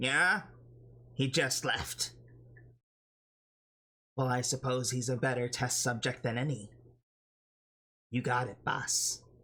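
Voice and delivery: put-on nasal character voice. A game master voices an unseen character on the phone, in a nasally voice. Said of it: "you hear the nasally voice say again".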